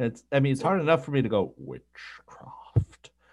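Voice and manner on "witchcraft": hushed near-whisper, breathed out just above whisper. Trying a Frollo voice again after saying the touch is lost: quiet Frollo voice. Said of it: "say that again in Frollo's voice".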